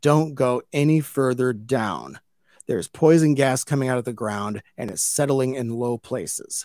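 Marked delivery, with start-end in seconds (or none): none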